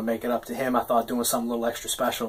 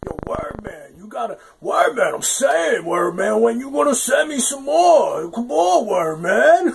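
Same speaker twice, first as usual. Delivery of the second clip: loud, gravelly, very high voice; 12 semitones higher, 5 dB louder than usual. Retelling what a friend said about the writing: imitating a friend's gravelly voice. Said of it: "like that swallowed gravel speak".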